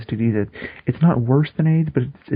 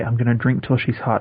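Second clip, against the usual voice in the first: usual speaking voice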